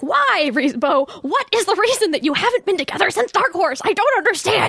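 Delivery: mock frustrated, exasperated yelling. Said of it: "So I was yelling about that".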